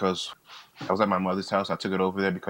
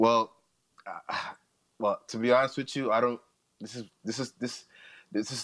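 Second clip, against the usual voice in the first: stuttering, stammering speech, much slower; 4 semitones higher than usual. Answering a question about tormenting two people, stuttering. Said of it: "sorry, I'm stuttering".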